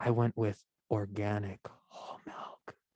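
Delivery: soft, hushed, close-up whisper. Answering the other speaker's question about the milk she used, whispering. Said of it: "I don't know why I'm whispering".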